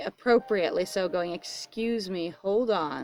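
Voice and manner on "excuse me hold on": put-on, very slow, cranky, grumpy delivery. Voicing a character on screen who is getting grumpy: mock grumpy. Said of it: "And she's getting grumpy".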